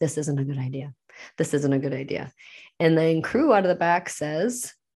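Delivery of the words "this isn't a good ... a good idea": put-on muttering in a lower voice. Speaker recounting a shopping trip, imitating Ryan muttering under his breath. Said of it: "Ryan kept saying under his breath".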